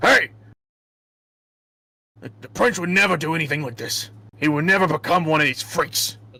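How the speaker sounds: barking gruff voice. Voicing a character who barks at the party while they walk: Burke barking. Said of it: "you'll hear, uh, Burke bark at you".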